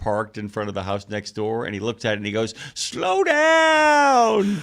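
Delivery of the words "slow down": put-on very high, loud old-man yell, down, stretched out. Retelling a commercial where an old man goes outside: imitating an old man yelling. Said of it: "the old man comes outside".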